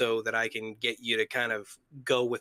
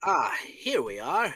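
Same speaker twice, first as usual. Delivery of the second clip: high, nerdy video-game lab scientist voice; 6 semitones higher than usual. Asked to repeat a phrase in another voice, doing a Half-Life Scientist voice. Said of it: "but in Half-Life Scientist voice".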